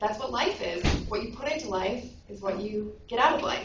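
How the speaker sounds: usual speaking voice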